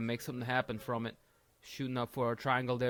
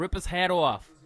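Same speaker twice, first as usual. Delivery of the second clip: loud, high-pitched New York accent; 6 semitones higher, 8 dB louder than usual. Repeating a shouted line to the crowd in a put-on voice while commentating on a fight. New York accent. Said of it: "I said it like a New Yorker".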